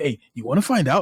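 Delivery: put-on social media narrator voice. Speaker demonstrates the common narration on social videos in a TikTok narrator voice. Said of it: "like the default voice for TikTok and Reels narration".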